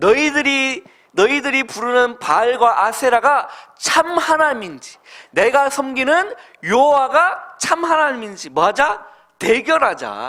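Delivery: bold, high, loud, ringing delivery.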